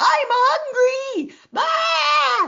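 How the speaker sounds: put-on very high, shrill, piercing baby scream at full volume. Explaining where survival stories come from, imitating a baby screaming. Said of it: "the newborn baby screams at the top of their lung".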